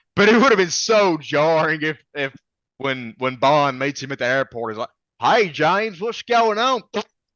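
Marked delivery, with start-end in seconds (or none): 5.2-6.8 put-on very high, over-the-top, hammed-up Southern accent. Speaker imagining a character greeting Bond at the airport, in an exaggerated southern accent. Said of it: "if he had had a southern accent".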